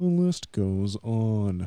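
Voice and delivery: slow, put-on storybook narrator voice. Repeating a phrase from the conversation for a joke: put-on narrator voice. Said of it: "my narrator voice".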